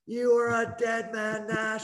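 mild, toned-down yell, pitched high. Quoting Kelly Chase yelling at him from the other bench; retelling Kelly Chase's yell. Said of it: "Kelly Chase yelling at me".

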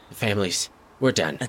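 weak whispering. A fading woman answers whether she can stop it, in a fading whisper. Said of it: "she's just kind of whispering".

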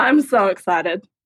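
flat, low-energy, unexcited delivery. Starting a show with Théa after a long break: flat, low-energy. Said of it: "the energy of that was so just minor".

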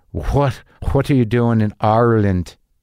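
unsteady attempted Irish accent. Act out the customs guy questioning you on arrival in Ireland, in an attempted Irish accent. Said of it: "I can't do an Irish accent. Maybe I can".

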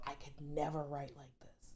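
awed, soft, low whisper.

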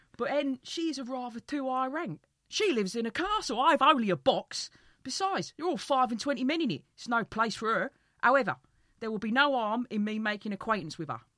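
very loud, chirpy, cheeky London soldier voice. Reading a story aloud, voicing a soldier character, cheeky Londoner soldier voice. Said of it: "She would be just a wife for me, ... like a cheeky, chappy, Londoner kind of like soldier".

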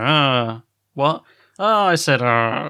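very slow mumble under the breath, barely audible. Quoting a favourite line delivery from an episode: Kent impression. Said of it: "Kent later on as well when he's like".

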